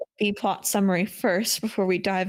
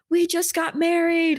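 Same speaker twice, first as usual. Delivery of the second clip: loud yelling out. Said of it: "she's yelling out".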